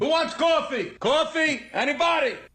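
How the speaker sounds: pushy, aggressive, put-on New York accent. Retelling a wake-up video, imitating a man offering coffee in an aggressive new york accent. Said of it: "it's the New York accent".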